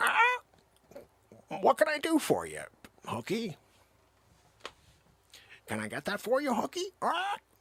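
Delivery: high, swooping, sing-song talking parrot voice. Acting out a service parrot offering to help: voicing a talking parrot. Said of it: "Chester simply says".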